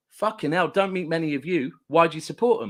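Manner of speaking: ordinary delivery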